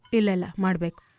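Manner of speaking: usual speaking voice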